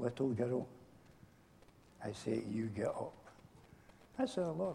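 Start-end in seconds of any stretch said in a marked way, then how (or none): 0.0-3.1 very hushed, soft, tender, gentle delivery. Retelling how Jesus spoke the words to the girl: gentle, as Jesus speaking. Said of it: "Or was he a gentle speaking".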